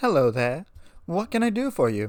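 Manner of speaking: kindly, sweet, gentle tone. An old mare greets a visitor in her shop, in a sweet tone. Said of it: "she said in a sweet tone".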